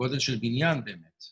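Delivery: ordinary talk, nothing marked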